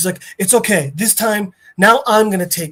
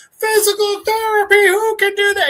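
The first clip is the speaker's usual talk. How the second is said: put-on complaining tone, higher pitch; 14 semitones higher than usual. Retelling a show scene where a man rejects physical therapy: imitating someone complaining. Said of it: "he's just complaining non-fucking-stop".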